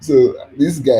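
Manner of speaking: loud, slow words spoken while laughing.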